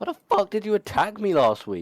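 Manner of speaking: put-on very high, shrill, enraged shout. Retelling how Colt confronts Hironaka about last week's attack, imitating someone furious. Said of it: "Colt is furious".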